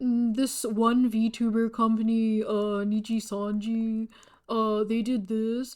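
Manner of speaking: put-on streamer commentary voice. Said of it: "Moist Critical impersonation".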